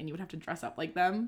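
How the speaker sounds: normal talking voice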